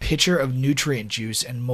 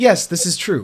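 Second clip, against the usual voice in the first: very loud robotic speech, higher and louder; 6 semitones higher, 7 dB louder than usual. Voicing an android introducing himself: loud android voice. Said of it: "He talks, like, really loudly".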